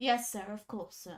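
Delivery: mumbled, grudging tone. Voicing a guard who slumps at the reply: muttering under his breath. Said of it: "mutters something under his breath".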